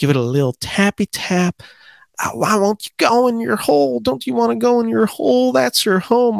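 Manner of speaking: mock temper-losing yell, very high, angry. Speaker quotes a favorite film scene of a golfer putting, imitating Sandler yelling. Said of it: "yelling like".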